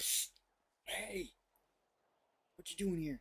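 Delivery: breathy, hushed, soft whisper. Acting out what to say to him when he returns: whispering. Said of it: "I'm just gonna whisper out to him".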